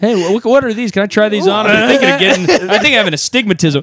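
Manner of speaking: high, bright, mock-friendly, fake-casual chatter.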